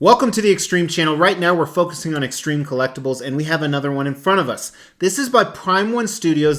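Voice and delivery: very fast, rushed delivery. Opening a collectibles video on the channel, talking fast. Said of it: "I have no idea why I'm talking so fast".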